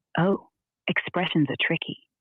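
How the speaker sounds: ordinary delivery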